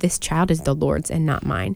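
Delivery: plain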